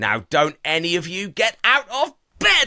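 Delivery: put-on shouting. Retelling how an old woman with a walking stick told the children to stay in bed: imitating someone shouting. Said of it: "as she shouts, "Bed,"".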